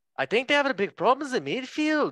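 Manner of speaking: put-on high-pitched, loud Scouse accent. After asking where he is from, the speaker attempts a Carragher Scouse impression. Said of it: "he's Scouts".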